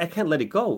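ordinary talk, nothing marked

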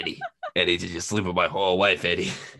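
animated character voice, pitch swooping all over. Doing a Danny DeVito joke as Venom: Danny DeVito voice. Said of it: "the Danny DeVito joke I always go to".

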